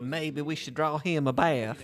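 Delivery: put-on blend of Scottish and rural Southern accent. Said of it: "hit notes of Scottish and redneck in the same accent".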